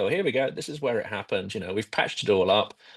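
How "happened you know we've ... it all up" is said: ordinary talk, nothing marked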